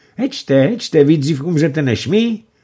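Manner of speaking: high, teasing, exclaimed calling out. Adelka and Vilímek call to the others after boats sink; exclaiming. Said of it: "zvolala Adelka s Vilímkem".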